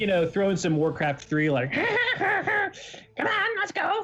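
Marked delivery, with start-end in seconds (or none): 1.7-4.0 deliberately awful goblin voice, very high, very slow. Speaker tries out the worst goblin voice they can do, worst goblin voice. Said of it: "the worst goblin voice that I can do".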